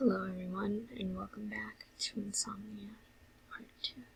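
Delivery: very soft, quiet whisper. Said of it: "sorry for my quiet voice".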